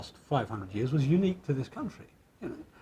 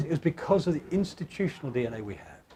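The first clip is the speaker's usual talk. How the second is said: plain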